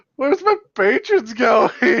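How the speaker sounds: very high, bewildered, puzzled little dwarf voice. Voicing a dwarf in the corner as patrons leave: dwarf voice, puzzled. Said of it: "The dwarf is over in the corner going".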